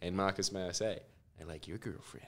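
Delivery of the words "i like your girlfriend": unnecessarily creepy, very quiet whispered voice. Retelling own reply to a thank-you text: put-on creepy voice. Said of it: "I didn't have to put that voice on".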